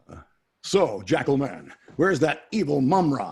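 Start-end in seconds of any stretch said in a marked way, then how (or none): 1.0-3.3 loud, swooping, belted cartoon hero voice. Showing how he switches between characters, the speaker says this as Lionel's cartoon voice. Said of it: "Lionel, I can't keep it straight".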